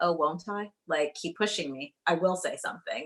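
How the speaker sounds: plain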